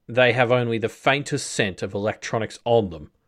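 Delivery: ordinary delivery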